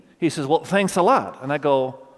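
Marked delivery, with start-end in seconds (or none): 0.5-1.4 dry, pointed, acted-out sarcasm. Retelling what a father said to them, mock-sarcastic retelling. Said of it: "Kind of with a sarcastic attitude".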